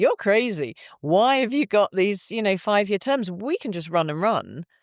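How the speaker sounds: put-on failed American accent. Speaker retells american visitors' reaction to five-year terms, in a bad american accent. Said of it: "I can't do the American accent".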